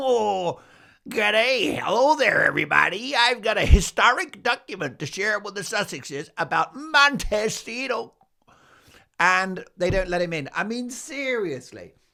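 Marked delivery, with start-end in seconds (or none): 0.0-8.1 put-on loud, poorly done, decrepit tiny old man voice. Acting out a caller at the Sussexes' door who is not let in, poor little decrepit character voice. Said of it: "this poor little decrepit character".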